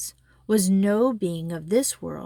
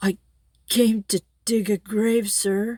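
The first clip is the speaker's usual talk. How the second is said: halting, stammered delivery; 2 semitones higher than usual. Narrator reading a gravedigger's reply to a goblin, stammering. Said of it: "stammered Gabriel Grubb".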